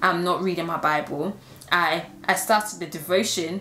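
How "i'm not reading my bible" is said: ordinary talk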